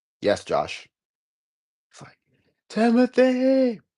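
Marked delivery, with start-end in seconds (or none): 0.2-0.9 bland, flat, zero-enthusiasm tone. Mocking how he answered josh, imitating a bland reply. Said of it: "You gotta be so bland like that".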